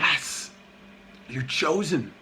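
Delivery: soft, breathy, tempting whisper.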